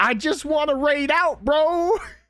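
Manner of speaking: acted out shrill, high, stretched-out scream. Retelling how the other streamer acted on camera: imitating someone screaming. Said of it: "You just screamed".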